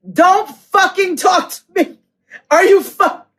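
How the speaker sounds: livid, furious tone. Retelling own reply to an insulting question: retelling own livid outburst.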